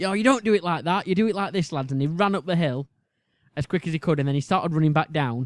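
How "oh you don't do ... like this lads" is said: play-acted coach voice, shouting out. Retelling how a football manager shouted at the team: imitating a man shouting. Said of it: "he was shouting at us".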